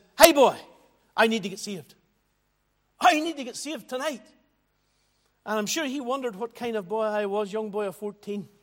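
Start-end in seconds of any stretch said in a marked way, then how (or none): 0.2-4.2 put-on Northern Irish Ballymena accent. Retelling going to the mission preacher after the meeting, aged fourteen: best Ballymena accent. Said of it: "in my best Balamina accent".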